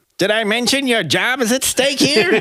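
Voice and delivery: very high, nasally voice. Quoting the boss from the film's opening scene: Incredibles insurance boss voice. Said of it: "high sort of nasally voice".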